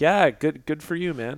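sarcastic and sad. Showing how they would congratulate Stefan: sarcastic and sad. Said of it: "kind of sarcastically and sad".

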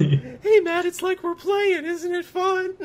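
very high, tiny cartoon-critter voice. Joking about a worst-case cutscene watch party, in a Mickey Mouse voice. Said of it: "I don't know why I became Mickey Mouse there".

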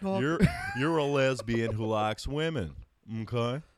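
animated host voice with big pitch swings. Talking about a guest on Dr. Phil, the speaker quotes the host in a Dr. Phil impression. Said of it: "When did you turn to Bob Mackie?".

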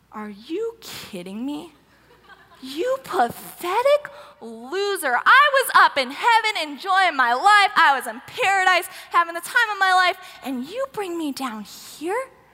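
mock seething, outraged tirade. Retelling a biblical scene, speaking as Samuel scolding Saul: acting out livid anger. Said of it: "he's livid".

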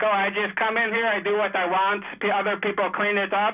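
normal talking voice

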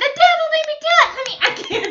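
very high, very loud, shrill voice. Trying out a Flip Wilson character line after looking it up: high-pitched Geraldine voice. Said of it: "Let me try".

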